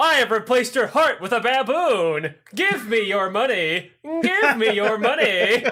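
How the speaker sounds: canned, looping, repetitive animatronic machine voice. Retelling a show scene, imitating a looping animatronic doctor. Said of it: "the doctor's like".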